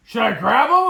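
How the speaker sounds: yelling, very high and very loud. Retelling a son's question near a wounded buck: imitating son yelling. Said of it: "he's yelling like".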